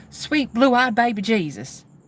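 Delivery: put-on Southern-accented voice. Imitating the phrase a man named Mike always said: Southern accent. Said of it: "a man with a Southern accent saying it".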